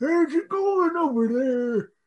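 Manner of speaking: put-on old man voice, very high-pitched. Telling a joke about a stoplight encounter, the speaker voices the old man in an old man voice. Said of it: "That's a good old".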